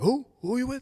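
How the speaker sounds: play-acted very high, loud, aggressive, confrontational tone. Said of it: "he's all aggressive".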